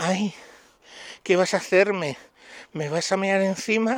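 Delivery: high, camp, effeminate voice. Retelling words overheard on a video's audio: Pedro J. in a camp effeminate voice. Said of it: "con una voz de maricona".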